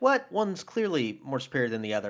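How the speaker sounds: plain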